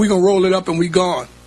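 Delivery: ordinary delivery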